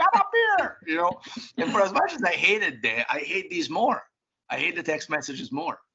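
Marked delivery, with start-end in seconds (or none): 0.0-0.8 high-pitched yelling. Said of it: "my mom twenty years ago be yelling".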